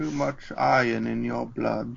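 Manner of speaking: very slow, dragged-out, rough, creaky voice. Quoting an X-Men line: Ian McKellen impression. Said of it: "Is that an impression of Sir Ian McKellen?".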